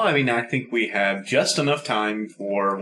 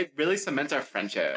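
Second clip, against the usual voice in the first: ordinary talk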